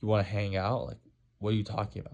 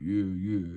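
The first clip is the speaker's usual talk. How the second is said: forced, faked deep put-on tone. Describing a disliked guy, imitating his fake deep voice. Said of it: "he would like fake his voice".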